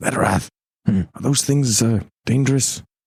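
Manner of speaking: secretive, voiced stage half-whisper. Half-whispering a question up to a companion in character: half-whispering. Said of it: "whisper up to Edorath".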